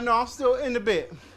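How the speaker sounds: ordinary delivery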